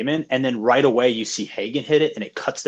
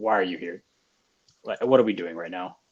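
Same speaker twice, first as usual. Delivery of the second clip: put-on fed-up, exasperated tone, lower; 5 semitones lower, 4 dB quieter than usual. Retelling a movie scene of sitting alone in the house: imitating Matt Damon sounding fed up. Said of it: "fed up with Charlize Theron. He's like".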